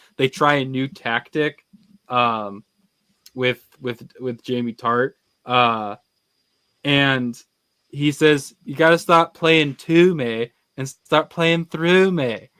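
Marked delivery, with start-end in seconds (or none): 8.7-12.4 bold put-on delivery, loud, belted out, high. Quoting a footballer's line from a show: Jamie Tart impression. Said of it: "that was a great Jamie Tart impression".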